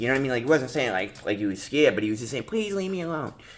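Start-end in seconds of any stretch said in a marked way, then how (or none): 2.4-3.3 put-on soft, high, whiny voice. Retelling how a kid answered him when he went over, imitating a whiny kid. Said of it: "like a little whine bag".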